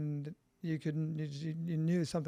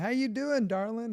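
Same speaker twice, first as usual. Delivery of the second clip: put-on little Kentucky accent, high and raised; 7 semitones higher, 6 dB louder than usual. Retelling how a woman walked up and greeted you before a hug, in Linda Starwolf's little Kentucky accent. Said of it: "in this little Kentucky accent".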